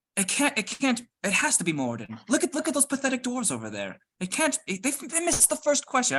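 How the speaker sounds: whisper loud enough to carry. During a game, a player insults the dwarves so others hear: loud stage whisper. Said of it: "I'm just gonna start whispering loudly".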